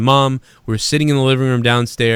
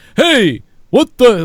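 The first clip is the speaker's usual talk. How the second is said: put-on puppet alien voice, higher and louder; 10 semitones higher, 5 dB louder than usual. Remembering the sitcom Alf with friends, imitating Alf. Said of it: "whatever the fuck he would say".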